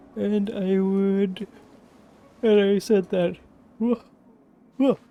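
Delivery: words through a loud yawn. Giving viewers a quick progress update, yawning while talking.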